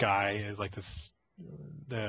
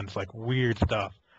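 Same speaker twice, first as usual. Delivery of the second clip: ordinary talk, nothing marked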